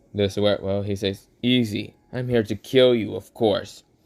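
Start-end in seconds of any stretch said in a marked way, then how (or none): 1.5-3.9 gravelly fake voice. Voicing the Entity speaking to the narrator during a fight: rough Entity voice. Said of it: "speak out in a very kind of rough up voice".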